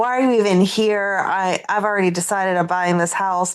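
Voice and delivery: put-on defensive tone. Retelling a dispute over a house, acting out a man getting defensive: retelling defensiveness. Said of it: "Drew gets all defensive and is like".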